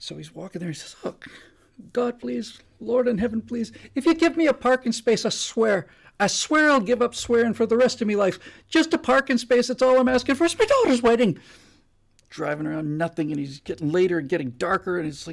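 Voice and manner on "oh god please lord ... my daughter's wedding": put-on Irish brogue, loud and pleading. Telling a joke, voicing the late driver in an Irish accent. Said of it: "he's much better with the accent than I am".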